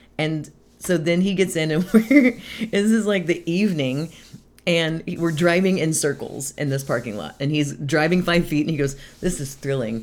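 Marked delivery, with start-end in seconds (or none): 9.2-10.1 sarcastic tone, quieter. Recounting him driving in circles in a parking lot: retelling a sarcastic remark. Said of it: "He's being sarcastic".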